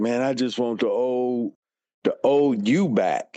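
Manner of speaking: put-on tearful, crying voice. Retelling what a crying god brother said: imitating someone crying. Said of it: "he was crying and he was like".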